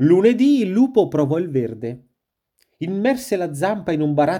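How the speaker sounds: plain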